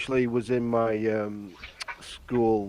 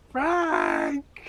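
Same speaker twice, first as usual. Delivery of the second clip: very high, sinister put-on voice, called out. Calling Frank back by impersonating Polly, in a sinister Polly voice. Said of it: "that is quite sinister".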